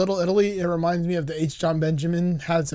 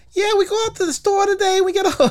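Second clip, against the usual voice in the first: put-on very high little-girl squeak, Jersey accent; 14 semitones higher than usual. Retelling a tiny girl being interviewed: imitating a Jersey Shore type girl. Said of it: "a little tiny Jersey Shore type girl".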